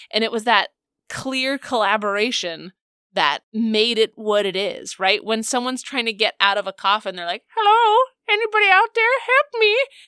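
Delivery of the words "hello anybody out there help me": very high, goofy, silly ghost voice. Describing a ghost trying to get out of a coffin, very silly voice. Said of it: "a very silly voice".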